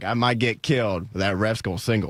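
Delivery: put-on Southern American accent. Retelling what Michael Irvin said in a football story, Michael Irvin in Southern accent. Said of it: "I don't know why I'm doing a Southern accent".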